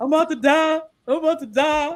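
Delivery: high, dramatic mock whine of a sick man.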